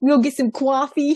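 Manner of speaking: put-on Bronx New York accent. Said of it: "he sounded like he was from New York".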